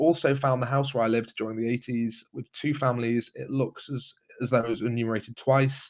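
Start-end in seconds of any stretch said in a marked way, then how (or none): none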